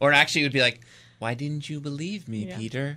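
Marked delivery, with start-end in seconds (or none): 1.2-3.0 acted, expressionless, flat, quiet deadpan monotone. Imagining what a woman watching the show would say to Peter, acting out a flat, expressionless line. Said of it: "With no expression".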